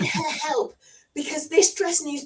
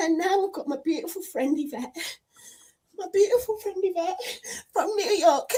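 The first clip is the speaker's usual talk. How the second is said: tearful, words pushed out through crying; 3 semitones higher than usual. A streamer greets a friend after a super chat, crying while talking. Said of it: "I've got to stop crying".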